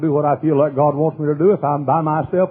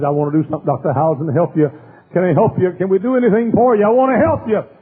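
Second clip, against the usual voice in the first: put-on tearful, crying, weeping woman voice; 3 semitones higher than usual. Retelling how a crying woman offered help: imitating a crying woman. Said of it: "and she was crying".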